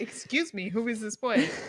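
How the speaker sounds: mock suspicious, demanding, pointed accusatory tone. Retelling what Renee asks Bella about the boy: accusatory Renee impression. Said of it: "She's very accusatory".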